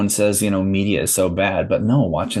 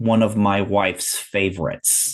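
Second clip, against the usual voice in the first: put-on, slow, scornful, sarcastic, disdainful tone. Retelling a movie scene where an attendant answers a question, mimicking sarcastic disdain. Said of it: "he says it with that disdain in his voice".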